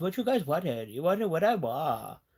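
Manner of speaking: put-on sing-song Valley Girl lilt. Meaning to do another voice, slipping into a valley girl voice. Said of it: "but then I did like Valley Valley Girl voice".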